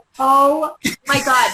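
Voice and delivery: freaked-out, loud, panicked cry of alarm. Retelling the moment of realizing friends were left behind: imitating own past panic. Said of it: "I'm freaking out".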